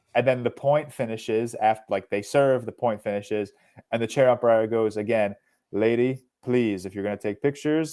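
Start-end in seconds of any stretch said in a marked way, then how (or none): 5.7-7.9 put-on European accent. Retelling a chair umpire scolding someone taking flash pictures, imitating umpire's European accent. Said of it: "he has like this European accent".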